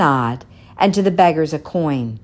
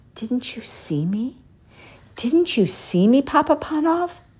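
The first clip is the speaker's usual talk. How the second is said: high, soft whisper, words one after another; 9 semitones higher than usual. People the old shoemaker met that day pass him one by one, whispering. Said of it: "they whispered one by one".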